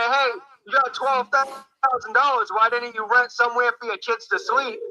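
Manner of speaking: ordinary talk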